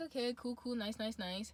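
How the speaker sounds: normal talking voice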